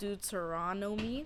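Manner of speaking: very slow, careful pronunciation.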